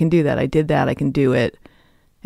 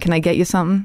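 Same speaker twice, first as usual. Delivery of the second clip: kinda tough New York accent; 4 semitones higher than usual. Showing how a past new york waitress role sounded: new york accent. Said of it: "what's a New York accent?".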